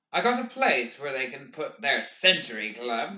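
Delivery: ordinary delivery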